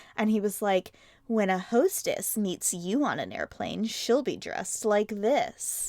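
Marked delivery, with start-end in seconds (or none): 1.3-5.9 sultry, seductive commercial narrator voice. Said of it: "a man talking in a seductive voice".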